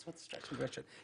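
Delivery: very soft whisper.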